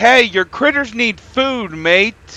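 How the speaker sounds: light, mild yelling. Retelling what the empty auto feeder says: imitating a feeder yelling. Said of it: "it starts yelling at you".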